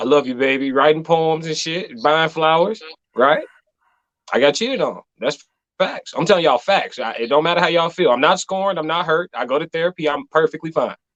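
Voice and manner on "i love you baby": doting, all-sugar, sweet lovey voice. Retelling his own past words from when he was the nice one: imitating his past sweetheart self. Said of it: "Back when I was the sweetheart".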